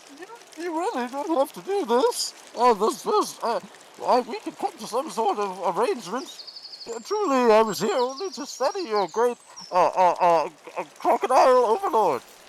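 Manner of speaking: high-pitched voice. Narrating a scene, speaker voices an unseen figure amid clanking chains, high-pitched. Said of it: "a uh high pitched voice says something along the lines of".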